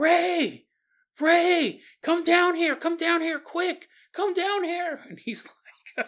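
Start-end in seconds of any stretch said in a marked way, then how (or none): 0.0-5.0 mock shrill, high, loud, urgent screaming. Retelling a wife calling her husband downstairs: imitating someone screaming out. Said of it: "he hears Dulce downstairs screaming out".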